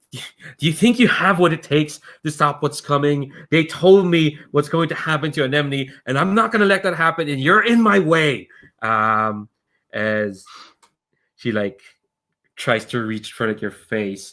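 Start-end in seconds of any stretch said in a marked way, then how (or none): 0.1-8.5 shouting loudly at full voice. Voicing a character who confronts a player and reaches for their face: character shouting. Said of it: "she shouts, like".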